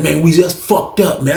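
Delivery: ordinary delivery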